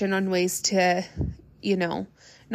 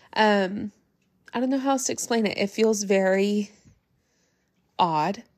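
choked up, voice catching with halting breaks. Telling viewers about family losses around the holidays; choked up. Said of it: "I'm getting choked up".

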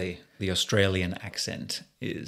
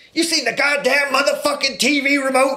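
loud, very high yelled swearing; 6 dB louder than usual. Imagining the actor at home asking his wife: Samuel L. Jackson voice. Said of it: "Like he's at home with his wife".

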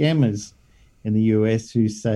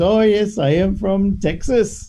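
comic put-on Indian accent, very high-pitched; 10 semitones higher, 3 dB louder than usual. Describing a funny video, quoting a guy in a put-on indian accent. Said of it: "a guy who's got an Indian accent and he says".

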